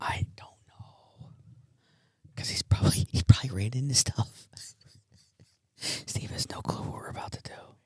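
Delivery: hushed whisper. Hosts opening their show in a dark studio, whispering. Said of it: "why are we whispering?".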